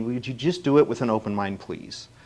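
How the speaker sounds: play-acted coaxing, earnest tone close to begging. Retelling a church friend asking to watch a movie: imitating a friend pleading. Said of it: "almost pleading with me".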